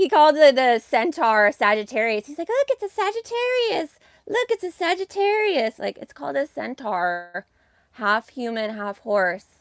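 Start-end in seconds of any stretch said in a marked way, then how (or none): 2.5-5.8 very high, light, feminine-sounding marvelling exclamation. Mocking how Jay Dreamers names the centaur: Jay Dreamers effeminate voice impression. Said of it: "has like the most effeminate voice".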